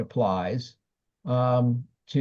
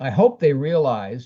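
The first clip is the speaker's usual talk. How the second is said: slow, with heavy stress on "hope". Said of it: "emphasis on hope".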